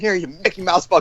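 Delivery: ranting yell. Imagining an angry caller telling everyone around him: imitating someone shouting. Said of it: "he's just shouting".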